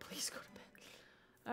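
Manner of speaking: soft, slow whisper with laughter.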